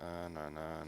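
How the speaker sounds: soft, level, flat deadpan monotone. Describing a past podcast interview, imitating how monotone they sounded. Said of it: "I was like so monotone".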